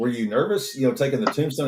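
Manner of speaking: ordinary delivery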